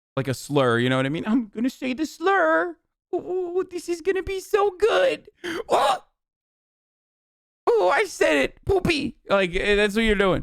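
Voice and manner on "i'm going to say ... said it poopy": put-on very high, very slow, drawn-out gleeful kid voice. Mocking someone as a twelve-year-old who just learned a bad word: imitating a twelve-year-old saying a bad word. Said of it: "like a twelve-year-old who just learned a bad word".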